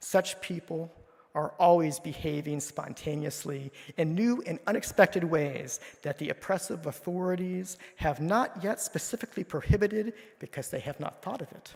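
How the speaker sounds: rapid, torrential, fiery delivery. Reading a quote from a firebrand critic to listeners, in a put-on Jeremy voice. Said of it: "put on my Jeremy voice for this quote".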